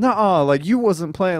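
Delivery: high, heated, angry chewing-out rant. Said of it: "she started going off on me".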